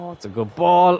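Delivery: voice breaking mid-phrase, high and slow. Reacting to a play while watching a match, voice cracking. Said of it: "my voice just cracked there".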